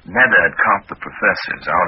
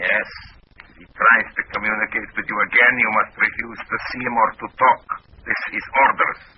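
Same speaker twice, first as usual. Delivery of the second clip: fake Russian accent throughout, pitched up; 5 semitones higher than usual. Answering a contact's question while posing as someone else: put-on russian accent. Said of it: "in my best Russian accent".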